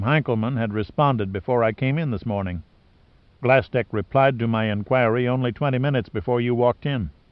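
ordinary delivery

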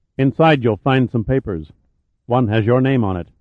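usual speaking voice

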